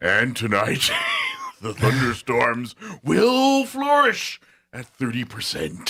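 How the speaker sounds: dramatic, swooping high voice, grand and ominous. Retelling how a local weather announcer read the forecast: imitating dramatic Orson Welles-style voice. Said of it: "this Orson Welles, like, just dramatic voice".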